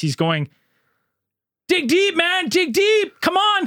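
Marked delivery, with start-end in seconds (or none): 1.7-3.7 very high, drawn-out, encouraging cheering yell. Retelling a colleague cheering on a kid at the last section: imitating someone yelling. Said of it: "he's just yelling literally what everyone else yells".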